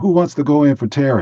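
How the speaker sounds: mock angry, high, upset yell. Retelling how the upset coach yelled at the bench: imitating a coach yelling. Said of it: "he yelled and said".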